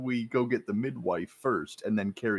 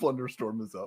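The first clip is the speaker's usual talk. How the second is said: ordinary talk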